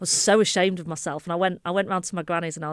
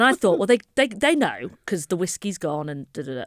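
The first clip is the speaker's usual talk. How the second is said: ordinary talk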